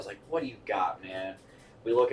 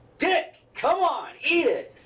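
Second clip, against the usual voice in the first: put-on very high, swooping, impatient yelling; 3 dB louder than usual. Telling a drunk story, acting out how Ray kept yelling at him: retelling a man's yelling. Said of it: "Fucking Ray kept yelling at me".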